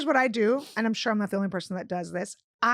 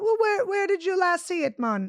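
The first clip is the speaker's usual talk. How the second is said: exaggerated caricature Jamaican accent, pitched high; 8 semitones higher than usual. Retelling what a call center worker on the phone said to him, caricature Jamaican accent. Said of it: "full on the caricature of a Jamaican accent".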